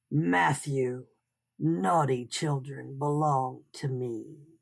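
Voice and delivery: deep, guttural, growling creature voice. Narrator reading the scarecrow figure speaking to matthew; guttural growl. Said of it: "A guttural voice like the wind through dry reeds growled".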